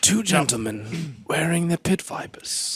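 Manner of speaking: nature documentary narrator voice. Describing two men in pit vipers: David Attenborough voice. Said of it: "a David Attenborough voice".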